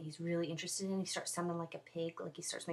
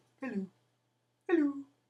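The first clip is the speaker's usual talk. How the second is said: loud, high-pitched dog voice; 8 semitones higher, 9 dB louder than usual. Talking about their first dog, the speaker shows how he sounds: Kitty the dog's voice. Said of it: "He sounds like this".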